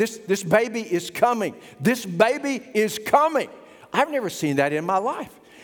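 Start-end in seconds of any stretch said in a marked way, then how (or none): 0.0-3.5 slow hollering call, no strain. Retelling how a woman hollered out as the elevator doors closed, retelling a woman hollering. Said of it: "She hollers out, and she's like".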